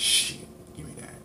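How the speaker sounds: soft, slow, greedy, desperate whisper.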